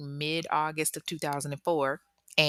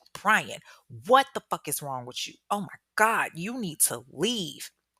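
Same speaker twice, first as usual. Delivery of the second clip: put-on fed-up, exasperated woman voice. Retelling how a fed-up woman told Brian to leave: imitating a fed-up woman. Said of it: "she's fed up".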